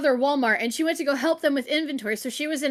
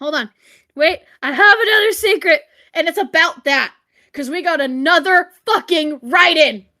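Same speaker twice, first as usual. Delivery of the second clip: excited, aggressive, worked-up, forceful tone, louder; 7 dB louder than usual. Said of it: "That's why I'm aggressive".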